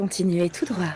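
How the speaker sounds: flat sat-nav style navigation voice. Offering to play the GPS for a driver watching the road: GPS navigation voice. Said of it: "je peux faire la voix du G P S".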